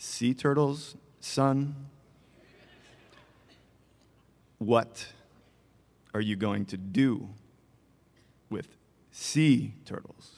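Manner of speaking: low, stern, grave fatherly gravitas. Retelling his father questioning him in the living room, father's Harvard MBA voice. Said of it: "he looks at me in his Harvard MBA voice".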